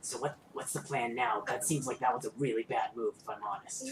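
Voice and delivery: close half-whisper, right in the ear. A game master voices a voice half-whispering in a character's ear, half-whispering. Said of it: "you hear a voice whisper in your ear".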